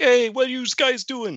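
put-on Brooklyn accent with pitch pushed way up. Describing a frog character from Glove and Boots, Johnny T Brooklyn accent. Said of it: "He's like this Brooklyn accent".

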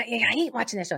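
ordinary delivery

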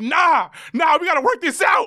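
shouting. Retelling an argument with a woman, the speaker reenacts retelling his own yelling. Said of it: "And I'm yelling".

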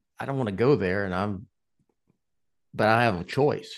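ordinary delivery

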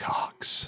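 close whisper, breathed softly. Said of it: "whisper in my ear".

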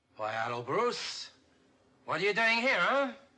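bad put-on Mexican accent. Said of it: "Troughton's really awful Mexican accent".

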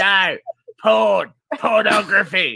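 put-on broad, very strong Australian accent. Retelling a mix-up, quoting the man's correction in a broad Australian accent. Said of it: "this is going to be very Australian".

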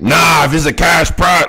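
mock angry yelling.

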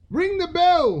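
very high, loud, gasped-out cry. Mr. howard, gazing at crawling creatures around his chair, speaks; gasping. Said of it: "he gasped".

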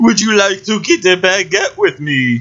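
put-on French accent. Retelling a scene as a girl walks past, Pauly Shore's fake French accent. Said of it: "In a French accent".

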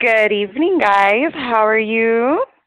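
very low, deep broadcast announcer voice. Guest greets the hosts on a call, live-broadcast voice. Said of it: "Don't come in here talking like you are on live".

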